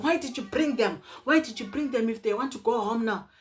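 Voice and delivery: heated, demanding shouting from a group. Retelling what some guys shouted at Tom, imitating their shouting. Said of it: "those guys started shouting".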